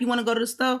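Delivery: fast, relaxed, run-together casual speech. Explaining to english learners how native speakers really ask questions: fast casual speech. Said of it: "we say it so fast".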